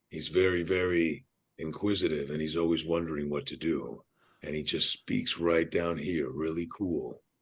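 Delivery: laid-back, cool, deep, soft, low character voice. Asked to do the character's voice one more time for the hosts: low character voice. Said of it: "do that voice one more time for us".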